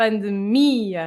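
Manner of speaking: pandemia with the syllable mi stressed. Explaining how people normally say pandemia, with stress on mi. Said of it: "you have to accentuate the I".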